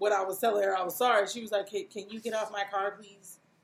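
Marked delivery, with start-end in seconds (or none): 1.7-3.4 soft, curt, snippy with a little attitude. Retelling what she said after an apology: imitating someone with attitude. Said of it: "at first she had a little attitude".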